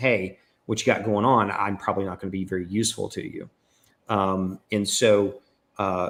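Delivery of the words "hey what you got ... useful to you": ordinary talk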